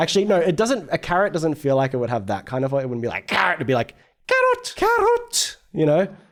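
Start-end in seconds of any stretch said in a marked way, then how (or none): 4.3-5.6 very high put-on monster call, creature cry. Playing with how a word could be said: Pokémon cry voice. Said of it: "Sounds like a Pokemon when I say it like that".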